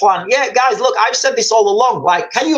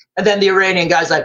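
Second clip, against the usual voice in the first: ordinary delivery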